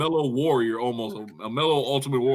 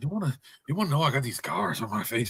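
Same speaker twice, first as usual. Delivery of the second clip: menacing villain voice, much quieter; 3 dB quieter than usual. Joining a friend's mockery of someone, doing a Heath Ledger's Joker impression. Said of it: "trying to channel like Heath Ledger's Joker".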